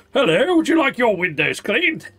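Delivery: put-on big, bulky, burly man voice. Reacting to a game character's voice, showing how he was expected to sound: burly man voice. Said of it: "I expect him to be more burly".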